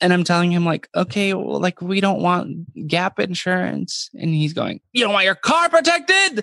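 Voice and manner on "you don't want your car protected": very high, shrill, loud yelling. Retelling a man at a car dealership yelling at the speaker, retelling him yelling. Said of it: "yelling at me in a car dealership".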